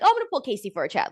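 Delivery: mock offhand, casual, matter-of-fact tone. Retelling how Melanie announced pulling Casey: imitating Melanie's matter-of-fact tone. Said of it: "matter of fact, very general".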